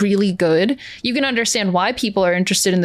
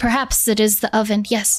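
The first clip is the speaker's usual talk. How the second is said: hushed, whispered voice. Voicing a companion leaning close to someone's ear: whispering. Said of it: "and she whispers to you".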